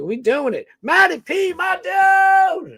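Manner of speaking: shrill, excited, very high rising scream. Thanking someone for being here with him, screaming. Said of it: "Sorry if I'm screaming".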